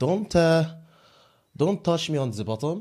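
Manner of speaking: put-on French accent. Doing an accent challenge round: put-on French accent. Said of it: "France, France, France".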